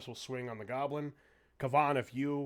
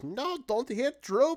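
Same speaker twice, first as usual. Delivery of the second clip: shrill, very high, drawn-out goblin voice; 12 semitones higher, 8 dB louder than usual. Voicing a goblin running away from the group: goblin voice. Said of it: "all you're gonna hear as he's running across is".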